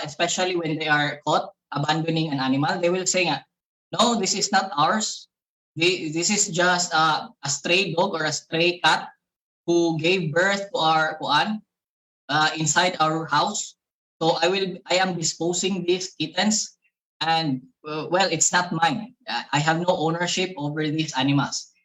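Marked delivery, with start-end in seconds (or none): none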